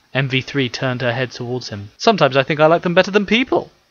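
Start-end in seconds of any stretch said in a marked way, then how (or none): 1.9-3.6 high-pitched, lightly joking tone. A man talks to a programmed companion tending a plant, joking. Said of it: "he joked".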